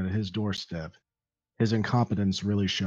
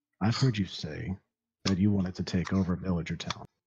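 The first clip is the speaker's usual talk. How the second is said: hushed, dropped, lowered voice. In a role-play scene, a character speaking so no one beyond the table hears: lowered voice. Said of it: "he lowers his voice so no one".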